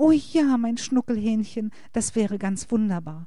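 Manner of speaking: high-pitched sweet cooing. Julia answers Olli, who just called her his darling, cooing lovingly. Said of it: "säuselte Julia und sah Olli verliebt an".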